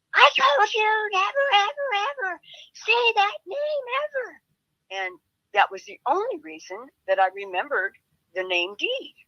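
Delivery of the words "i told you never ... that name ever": put-on weird screechy scream, very high, slow, drawn-out. Retelling how a man flipped out, imitating his weird screechy scream. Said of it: "he screamed in a real weird, screechy voice".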